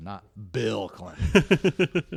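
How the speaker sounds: emphatic, slow, drawn-out and weighty. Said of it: "Not the Bill Clinton".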